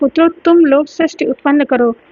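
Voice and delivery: ordinary talk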